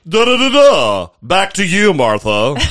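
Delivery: put-on news anchor delivery. Mocking how tv news people talk, doing a sign-off in a newscaster voice. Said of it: "Do they teach them to talk like that in school?".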